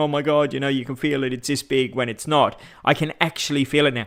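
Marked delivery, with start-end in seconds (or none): none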